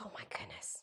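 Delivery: awed, very soft, hushed, breathy whisper.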